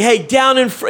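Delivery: put-on high shout, broken off mid-word. Retelling how a wedding guest acted: imitating someone yelling.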